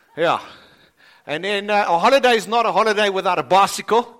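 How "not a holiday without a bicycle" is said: ordinary talk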